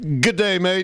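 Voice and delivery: high, best-attempt put-on Australian accent. Asked by the other speaker for their best australian accent, doing an australian accent. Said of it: "Can I hear your best Australian accent?".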